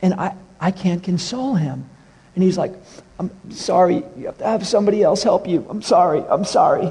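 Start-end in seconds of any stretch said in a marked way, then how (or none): 3.2-6.9 mock bawling, tearful voice. Retelling a store employee apologizing while walking away: imitating someone bawling. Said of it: "as he's walking away bawling".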